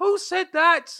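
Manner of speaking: put-on shrill, very loud, high-pitched Irish accent. Retelling an Irish English teacher overhearing the students, Irish teacher accent. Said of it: "stop the accent".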